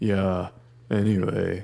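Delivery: very slow, creepy delivery in a deep drawl. Imagining how someone sounds on the show: imitating Laney, slow creepy deep voice. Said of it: "talk real slow and, like, creepy and deep".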